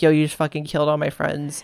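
ordinary delivery

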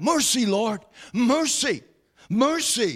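put-on, slow, desperate pleading cry. Retelling how a woman in scripture cried out: imitating a cry for mercy. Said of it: "she cried out".

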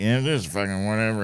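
quiet, glum, low-energy mopey voice. Describing own stage presence: imitating own quiet sad-sack manner. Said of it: "sad sack thing where I'm, like, kinda quiet".

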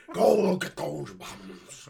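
loud, slow, drawn-out cartoon president voice. Doing a Futurama Richard Nixon impression: Futurama Richard Nixon impression. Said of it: "my Futurama Richard Nixon impression".

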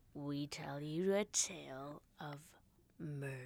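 low, hushed movie trailer narrator voice. Introducing your true crime tale to the listener, in a preview voice. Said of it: "It's like your preview voice".

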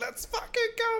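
mock hyped cheer, very high pitch.

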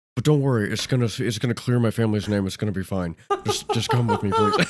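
put-on stone-faced movie-hero voice. Imitating an actor kidnapping the president: stone-faced Nicolas Cage impression. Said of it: "totally stone-faced, just being like".

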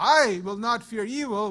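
stress on I, said loud.

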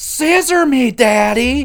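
loud, high-pitched yelling.

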